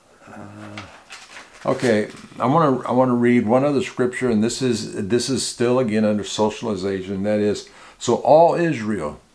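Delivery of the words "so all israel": slow, weighty stress on the word all. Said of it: "now I'm emphasizing the word all".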